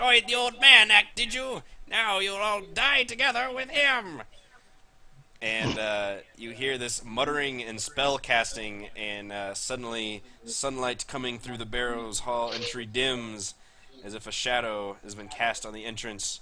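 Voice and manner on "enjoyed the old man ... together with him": tiny, shrill, very high, very loud voice. Narrating a scene to the players, an unseen speaker threatens them: little voice. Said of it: "you hear a little voice".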